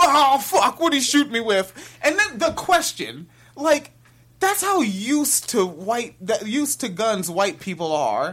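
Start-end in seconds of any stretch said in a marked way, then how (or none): 0.0-1.7 dude-bro voice, faster. Acting out a player who just got shot, in a bro voice. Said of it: "such a bro voice to say".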